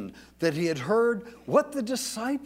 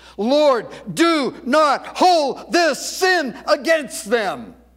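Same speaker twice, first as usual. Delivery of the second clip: very loud, high-pitched, big-voiced outcry; 7 semitones higher, 9 dB louder than usual. Speaker retells a bleeding man's words to listeners, retelling a cry in mega voice. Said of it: "He cries out with a mega voice".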